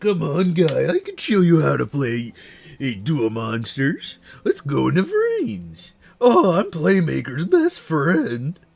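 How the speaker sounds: brash, pushy, loud, swooping cartoon voice. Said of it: "He sounds like Eddie from Ed, Ed and Eddie".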